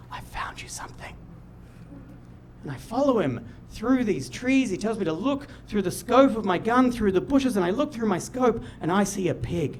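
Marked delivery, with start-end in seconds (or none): 0.1-1.2 very soft, hushed whisper under the breath. Quoting Dad coming back on a hunt to report what he found: retelling Dad's whisper. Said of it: "he whispers".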